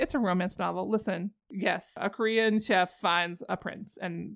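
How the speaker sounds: normal talking voice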